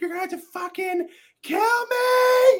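shrill, very high, loud acted scream, me drawn out. Retelling a TV scene where Ruth screams at someone: imitating a character screaming.

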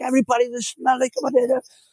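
very high, shrill, screaming rant. Retelling a man losing it at the speaker, imitating Stan screaming. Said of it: "he's like screaming at me in Polish".

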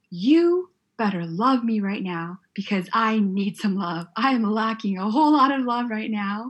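bossy, demanding, insistent need-it-now tone. Retelling own past prayer to God: retelling a demanding tone. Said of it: "I get into my demanding mode".

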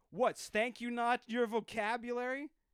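very high, shrill, loud, angry yelled shout. Retelling how a man shouted after the speaker walked away, imitating his shout. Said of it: "he started shouting".

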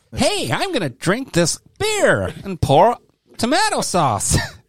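terrible fake American accent, pitched very high. Imitating an American who likes that beer: bad American accent. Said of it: "that was the worst accent".

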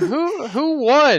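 mock very high, befuddled, dazed drunk voice. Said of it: "the drunk friend just doesn't even know".

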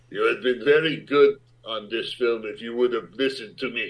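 thick, heavily laid-on put-on Greek accent. Retelling a director's goodbye line: imitating a heavy Greek accent. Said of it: "chain-smoking Greek man with a heavy accent".

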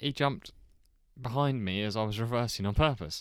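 ordinary delivery

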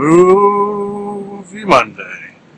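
high, drawn-out mooing cow voice stretching "movie". Host says his show's segment name, drawn out like a cow would say it. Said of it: "Perhaps that's how a cow would say it".

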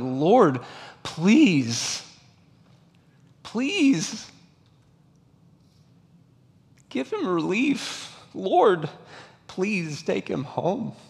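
play-acted high, swooping, imploring, begging tone. Speaker retelling daily prayers for someone close who was suffering, reenacting pleading with god. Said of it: "I was just pleading with God, like".

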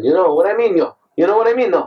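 not-quite Cajun, botched, in-between accent. Trying to do an accent while admitting it isn't right: failed Cajun accent attempt. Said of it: "I try to talk that way".

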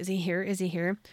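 plain

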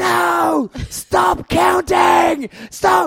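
put-on high, tearful child's scream. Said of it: "just screaming at Foxy".

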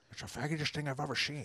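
put-on very quiet, hushed, murmured old politician voice. Taking a turn at the same quote after a bad attempt: Nixon impression. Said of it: "That's pretty good".

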